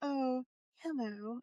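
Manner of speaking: slow, soft, passive-aggressive tone.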